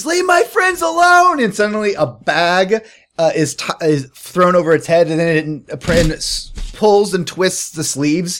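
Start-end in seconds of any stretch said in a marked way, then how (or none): 0.0-1.4 very high, shrill, loud scream. Voicing a character who rushes a creature to protect friends: screaming.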